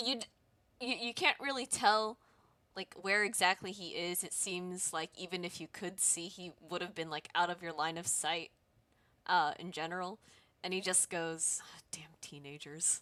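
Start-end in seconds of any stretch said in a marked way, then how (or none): 11.9-13.0 much quieter, lower muttering whisper. Retelling what a man somewhere out of sight said, in a low muttering whisper. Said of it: "a low whisper or mutter as he is".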